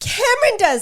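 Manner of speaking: high, shrill yelled outburst. Answering the other speaker's question about who does that, yelling. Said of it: "Sorry for yelling".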